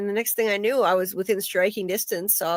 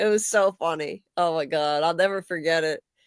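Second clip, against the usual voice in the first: ordinary talk, nothing marked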